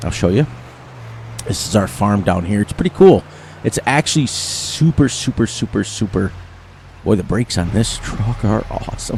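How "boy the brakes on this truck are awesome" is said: whispered, deeply heavy sarcasm. Giving a tour of the farm map while driving a truck: very sarcastic. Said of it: "I meant that very sarcastically".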